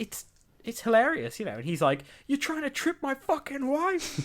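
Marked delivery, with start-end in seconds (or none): 2.3-4.3 put-on angry rant, much higher and faster. Retelling how Tom Hanks snapped at people near his wife, imitating Tom Hanks swearing angrily. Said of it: "he's effing and jeffing".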